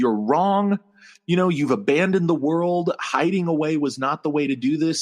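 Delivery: plain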